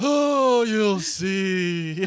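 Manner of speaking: booming, loud, with "see" stretched long. Imitating the other speaker's improv line: imitating the Hogwarts character line. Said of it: "And be like".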